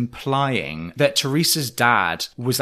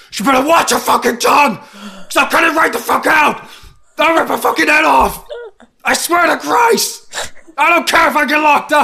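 very loud, very high, furious, enraged screaming bellow; 9 dB louder than usual. Recounting a show scene where she grows louder and louder, imitating a furious bellow. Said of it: "it gets like increasingly louder and louder".

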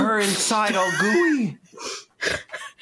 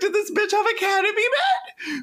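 high, laugh-cracked squeal. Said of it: "just the way you said that was just so funny".

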